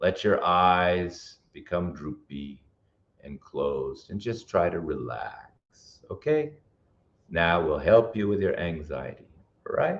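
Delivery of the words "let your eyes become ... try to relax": slow, toned-down, soothing relaxation-guide voice. Speaker leads a relaxation exercise in a talk on anxiety; slow, toned-down voice. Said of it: "I need to slow down".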